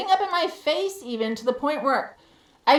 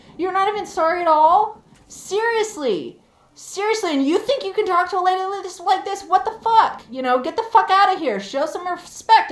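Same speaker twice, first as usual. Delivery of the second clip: acted shouting, higher; 6 semitones higher, 3 dB louder than usual. Retelling yelling back at trespassers who cornered her, retelling own yelling. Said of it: "And I'm yelling right back".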